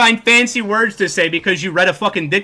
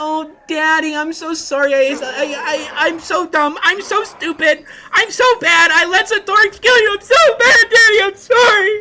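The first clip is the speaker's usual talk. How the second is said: very high-pitched, over-the-top, exaggerated grovelling and pleading; 11 semitones higher than usual. Mocking how some players act, with mocking exaggerated pleading. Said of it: "this is an exaggerated version of what these people do".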